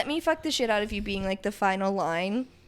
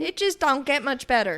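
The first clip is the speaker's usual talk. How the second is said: put-on light British Southern accent with flair; 3 semitones higher than usual. Co-host replying to thanks with a British Southern accent. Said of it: "that was like a little British Southern flair".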